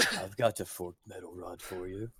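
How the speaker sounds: slow, very soft half-whisper, close to the ear. Voicing an unseen voice for a player, half-whispering in someone's ear. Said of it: "you actually hear a whisper in your ear saying".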